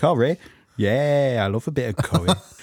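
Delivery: put-on northern English accent. Podcast host opening a new episode with his co-host, in a northern english accent. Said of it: "I think I'm going in all sorts of northern here".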